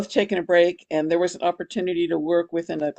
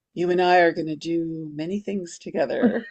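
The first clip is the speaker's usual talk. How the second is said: mystic, knowing, fortune-teller-like pronouncement tone. Retelling what a scene partner said after the first rehearsal: imitating a psychic manner. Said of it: "in her kind of psychic way".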